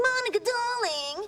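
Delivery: put-on British accent pitched very high. Quoting Amanda, the girl who used to live in the building, Amanda's fake British accent. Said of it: "Fake British accent".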